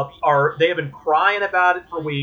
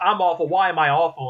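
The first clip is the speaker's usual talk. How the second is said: usual speaking voice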